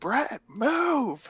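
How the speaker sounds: very high-pitched yell, "move" drawn out. Voicing a character who warns brett mid-fight: character yelling. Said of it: "she yells".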